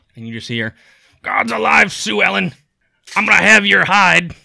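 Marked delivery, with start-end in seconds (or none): 1.3-4.3 furious, very loud, high, shrill bellow. Narrating a scene, voicing someone heard approaching, in a very irate voice. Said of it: "a very irate voice".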